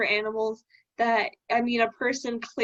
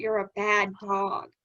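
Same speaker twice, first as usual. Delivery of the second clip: put-on deadly earnest, slow, no laughter; 2 semitones lower than usual. Retelling a story where a character stops joking, imitating dead serious, not joking. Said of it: "she's not joking anymore. She's not laughing".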